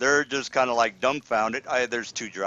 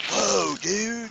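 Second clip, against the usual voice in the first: very high, creaky stoner surfer dude voice; 9 semitones higher than usual. Describing dumbfounded humans doing the surfer maneuver: surfer voice. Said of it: "doing the surfer maneuver".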